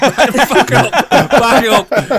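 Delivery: loud, high laughing outburst of disbelief.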